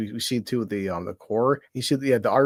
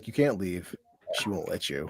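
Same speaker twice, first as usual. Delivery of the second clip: creepy, unsettling delivery that creeps under the skin; 4 semitones lower, 7 dB quieter than usual. Quoting a film line while watching, imitating Sam Neill, creepy. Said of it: "the way Sam Neill says".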